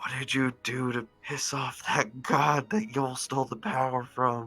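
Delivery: stage half-whisper, close and leaning in. Leaning close to ask a question in character, half-whispering. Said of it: "I get close and I whisper in Jin's ear".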